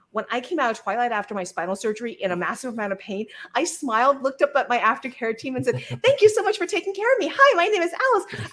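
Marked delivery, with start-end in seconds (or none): 6.0-8.5 squeaked out at a very high pitch. Waking after spinal surgery, speaker thanks her aftercare team: squeaky Minnie Mouse voice. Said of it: "I was in the squeaky Mickey Mouse voice, Minnie Mouse voice".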